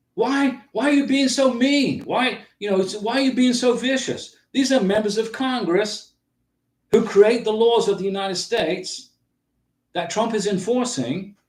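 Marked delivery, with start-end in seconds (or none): 0.2-4.4 put-on high, babyish whining voice. Mocking Democrat congressmen, imitating them with a mock whine like a baby. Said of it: "whining like little babies".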